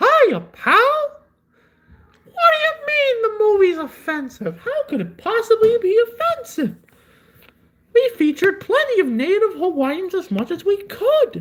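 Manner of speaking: pitched way up, bouncing around in pitch. Having promised a really good impression, begin it now in a Mickey Mouse voice. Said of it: "I can do a really good Mickey voice".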